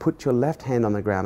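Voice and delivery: ordinary talk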